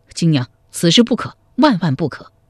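ordinary delivery, nothing marked

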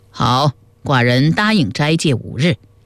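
ordinary delivery

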